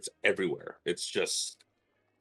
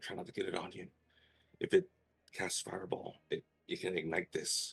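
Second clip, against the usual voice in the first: very quiet, low-toned, hushed whisper; 11 dB quieter than usual. Telling the players not to get the flammable stuff on them, in a low whisper. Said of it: "I whisper this, I guess, or I say it in like a low tone".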